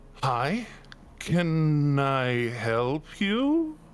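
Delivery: unexpectedly effeminate, swooping tone. The game master voices a box-office attendant greeting the players, in an effeminate voice. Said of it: "you hear a more effeminate voice than you were anticipating".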